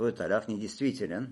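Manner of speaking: ordinary talk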